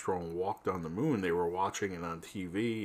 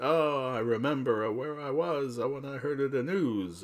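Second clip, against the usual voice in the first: put-on slow Italian accent, pitched up; 6 semitones higher than usual. Speaker quotes his grandfather answering about Pearl Harbor: grandpa's Italian accent. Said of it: "his Italian accent".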